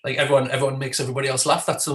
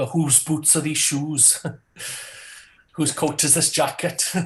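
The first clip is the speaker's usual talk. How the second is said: put-on Welsh accent on every word. After saying welsh is nice, the speaker tries out a welsh accent. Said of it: "Welsh is nice".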